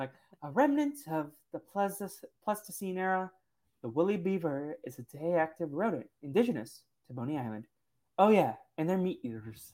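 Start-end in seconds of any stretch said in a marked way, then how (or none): 0.4-7.6 soft, textbook-style narrator voice. Discussing an episode, the speaker quotes Chris reading in Chris's history book voice. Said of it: "his history book voice".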